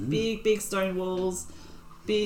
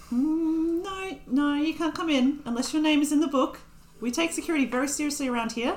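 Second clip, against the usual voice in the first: put-on old female gnome voice, much higher pitch; 8 semitones higher than usual. In a tabletop game, voicing an old female gnome the party meets: old female gnome voice. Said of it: "and you also see a gnome, a female gnome, and she also looks old for a gnome".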